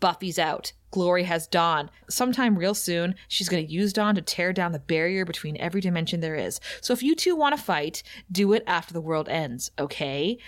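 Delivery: play-acted, collected, no-nonsense, dead calm and serious. Retelling a TV scene, quoting Willow: serious, dead calm Willow voice. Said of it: "She's so serious".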